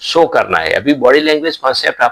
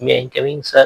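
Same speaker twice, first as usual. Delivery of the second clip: put-on meek and timid voice; 3 dB quieter than usual. Giving interview advice, acting out a candidate entering the room: mock-timid meek voice. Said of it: "ऐसे mister बेचारा बन के मत जाइए".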